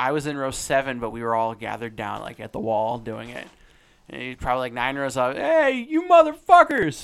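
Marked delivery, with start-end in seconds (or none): 5.3-7.0 put-on very high, very loud, shrill drunken hollering. Retelling a drunk fan nine rows up heckling the crowd: imitating a drunk heckler. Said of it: "Some old drunk dude".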